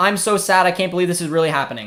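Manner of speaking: normal talking voice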